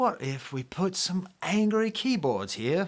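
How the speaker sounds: poor, high, slow Manchester accent attempt. Imitating a band's idea in a bad Manchester accent. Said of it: "That's not a very good Manchester accent".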